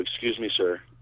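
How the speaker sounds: very calm, soft, measured polite tone. Retelling asking a driver to leave a parking spot: imitating own very calm voice. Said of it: "just like this, very calm".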